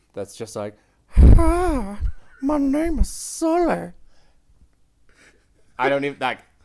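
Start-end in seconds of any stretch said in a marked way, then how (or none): 1.1-4.0 put-on puppet old man voice, loud, high, drawn-out hi. Showing the voice a man puts on to introduce himself: Muppet-meets-Family Guy old-man voice. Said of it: "puts on this voice that's sort of somewhere between like a Muppet and the old man".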